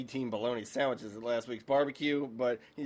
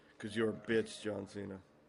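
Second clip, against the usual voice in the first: wrestling ring promo style, trash-talking delivery; 3 semitones lower, 5 dB quieter than usual. Recapping a wrestling match, doing a Roman Reigns promo voice. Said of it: "I'm just being Roman Reigns".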